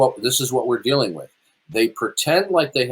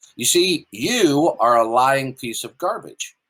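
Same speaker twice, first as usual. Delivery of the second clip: ordinary delivery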